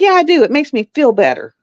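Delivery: mock heated, livid, defiant tone. Recounting a phone call where she was told not to yell, retelling her own yelling. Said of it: "you don't have to yell".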